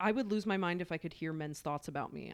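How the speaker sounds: ordinary talk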